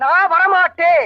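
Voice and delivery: loud shouting, yelling. Refusing to come inside during a quarrel, shouting. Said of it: "ஏன் இப்படி கத்துறீங்க?".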